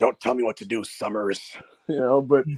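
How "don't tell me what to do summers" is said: very low, deep superhero voice. Retelling a wrestler's promo line, doing a Wolverine impression. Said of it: "a Wolverine impression here".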